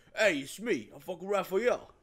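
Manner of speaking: stock cartoonish New York accent, pitched high. Retelling how Nolan North voiced Raphael, in Raphael's New York cartoon accent. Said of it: "in the most like like generic New York cartoon accent ever".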